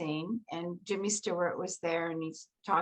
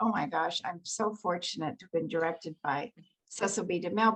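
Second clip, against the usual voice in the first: normal talking voice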